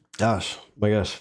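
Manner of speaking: spluttered gasp, sputtering, choking words. Speaking right after something went down the wrong pipe: choking on a drink. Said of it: "some of that fireball went down the wrong pipe".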